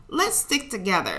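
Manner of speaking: ordinary delivery, nothing marked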